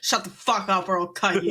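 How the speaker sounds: sudden, dangerous, menacing tone. Imagining a character suddenly pulling a knife: menacing threat as Astra. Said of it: "she just suddenly has a knife and she's like".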